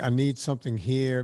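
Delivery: ordinary delivery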